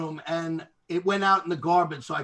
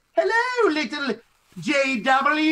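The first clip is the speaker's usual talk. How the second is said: high, very slow, put-on cartoonish character voice; 10 semitones higher than usual. Showing the voice an emoji face uses in messages for a baby: put-on emoji character voice. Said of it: "it talks in a voice like this".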